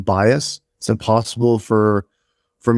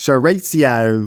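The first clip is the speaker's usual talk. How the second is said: slow, drawn-out Australian pronunciation of "chorizo". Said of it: "some people that pronounce it like this".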